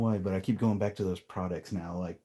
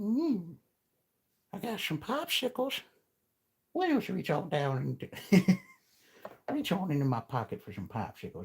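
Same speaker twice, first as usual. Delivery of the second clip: very high, swooping cartoon voice; 11 semitones higher than usual. Doing a voice like Herbert from Family Guy: Herbert from Family Guy voice. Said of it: "Be like Mister, uh, Herbert from Family Guy".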